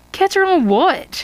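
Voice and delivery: very high, wary, suspicious tone. Narrator voicing Isabel questioning Peter about the trip, suspicious. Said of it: "Isabel asks suspiciously".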